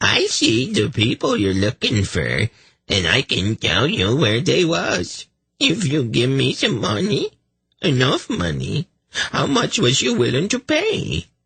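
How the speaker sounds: squeaky, swooping, fawning, grovelling, dim-witted voice. Reading a character feigning a dim servant: squeaky, servile, stupid voice. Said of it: "he said in a squeaky voice, dripping with servile stupidity".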